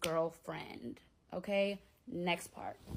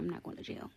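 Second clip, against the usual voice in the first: soft, hushed whisper. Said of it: "I'm whispering because my baby's asleep".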